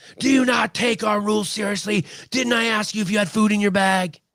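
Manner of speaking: very high, shrill, acted screeching scream. Retelling how a woman waving a bag of broccoli screamed at a man: imitating a woman screaming. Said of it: "she's screaming at him".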